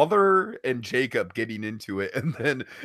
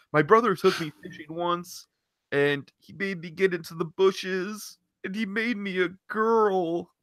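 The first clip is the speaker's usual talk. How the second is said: put-on high-pitched voice with the word "girl" drawn out; 6 semitones higher than usual. Retelling what Ethan said, Morty voice. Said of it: "I'm giving Ethan Morty's voice".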